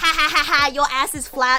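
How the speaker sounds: put-on, mocking, taunting tone. Showing what a mocking comment would have sounded like: pretend mocking taunt. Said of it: "me making fun of her butt".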